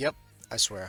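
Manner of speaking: flat, expressionless deadpan delivery. Retelling a character's sworn answer at a game's end: imitating a deadpan reply. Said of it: "he just deadpan stares her in the face and is like".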